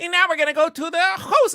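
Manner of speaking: sudden gleeful, high, nerdy put-on voice. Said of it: "he gets into an Eddie Deezen's fucking impersonation".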